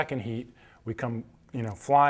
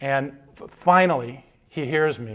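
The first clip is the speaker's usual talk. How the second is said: ordinary delivery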